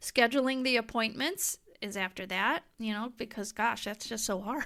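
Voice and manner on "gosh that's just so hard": sarcastic, mock sympathetic tone. Listing reasons people put off screening tests, sarcastic. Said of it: "I'm being sarcastic".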